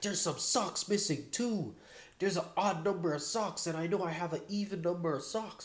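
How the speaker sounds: high-pitched, angry ranting, screaming. Retelling how a man screamed at his mom, imitating his screaming. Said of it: "he's just like screaming at her".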